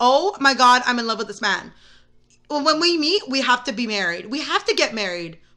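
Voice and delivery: ordinary talk, nothing marked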